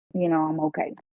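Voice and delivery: ordinary talk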